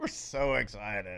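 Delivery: sarcastic, slow, laughing, fake mock excitement. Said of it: "Can y'all hear the excitement in our voice?".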